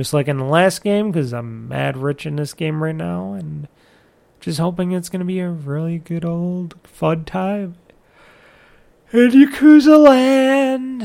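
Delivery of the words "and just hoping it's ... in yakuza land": yawning while talking, slower. Podcast host talking to listeners, yawning while talking. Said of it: "as you can tell, I'm yawning".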